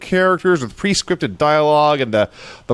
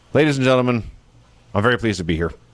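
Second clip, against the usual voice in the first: acted, bored, low, flat, zero-enthusiasm delivery; 4 semitones lower than usual. Retelling an announcer's interview opening: imitating zero enthusiasm. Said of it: "with zero enthusiasm".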